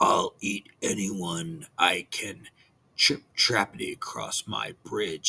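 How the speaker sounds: big, fierce, growling troll voice. The big bad troll leaps out from under the bridge, fierce growl. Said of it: "he growled fiercely".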